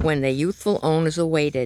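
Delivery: plain reading voice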